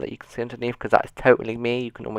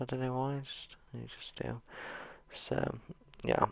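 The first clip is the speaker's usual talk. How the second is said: usual speaking voice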